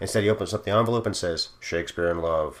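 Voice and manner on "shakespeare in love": flat, level monotone. You retell Harrison Ford opening the envelope at the Oscars and announcing the winner, in a Harrison Ford monotone. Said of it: "in his Harrison Ford monotone".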